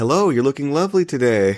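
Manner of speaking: acted, far too courteous, overly polite tone. Retelling own first-day catcalling attempt: imitating own too-polite catcall. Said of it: "that was too polite is the thing".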